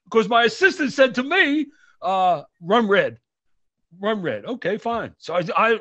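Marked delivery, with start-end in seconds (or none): none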